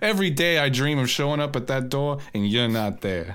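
put-on Boston accent. Speaker slips into an impression mid-conversation: Ben Affleck Boston accent. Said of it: "Boston accent there. It's my Ben Affleck".

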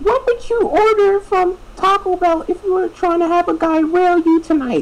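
very high-pitched put-on girlish voice.

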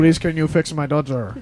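put-on Polish accent. Playing a mother in a comic bit, in an imagined Polish accent. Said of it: "this is what I imagine a Polish person".

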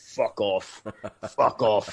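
low, very slow, dragged-out put-on British accent. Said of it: "the Brit on Monty Python's Meaning of Life ... he sounded like that".

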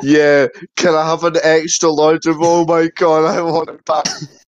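fake sobbing. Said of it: "Pretend to cry while you do it".

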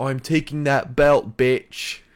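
loud, slow, growled British accent.

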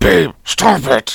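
rough, creaky scolding. Imitating the other speaker telling them to stop cursing: imitating partner's warning. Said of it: "and you say it like that".

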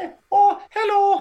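shrill, squeaky, very loud booming voice. Imitating a podcast guest named Jake: imitating Jake. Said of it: "my terrible impression".

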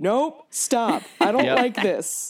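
mock, high-pitched yelling. Recalling a movie, the speaker acts out their past self retelling shouting at the tv. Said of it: "I was literally shouting at the TV".

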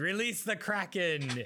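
put-on little battle cry scream, kept small. Retelling a comic where a little octopus screams: imitating a scream. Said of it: "the little octopus screamed".

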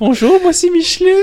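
tiny, very high, squeaky doll voice. Explaining how to introduce Micheline to a friend, small Micheline voice. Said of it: "Tu prends une petite voix en plus".

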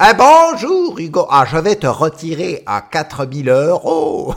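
loud, swooping cartoon-villain dub voice. Hearing the tax office take money from his bank account: Nicky Larson villain dub voice. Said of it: "je vais lui donner une voix de méchant de Nicky Larson".

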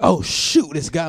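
starstruck outburst, all loud. Retelling walking into a club and spotting someone, loud. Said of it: "I'm all loud".

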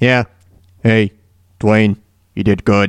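mock, very low, flat, bored droning monotone. Imitating a man who sounds uninterested when he talks, mock-uninterested flat monotone. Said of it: "He sounds very monotone, kind of. It seems like he's not really all that interested".

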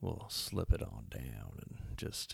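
fake ASMR-style voice. Announcing the next episode to a co-host, put-on asmr voice. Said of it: "next time I'm gonna do the whole podcast with this voice".

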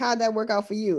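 plain

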